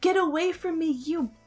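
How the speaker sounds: mock screaming. A woman launches out of a car and shoves the speaker; imitating her screaming. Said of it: "was screaming".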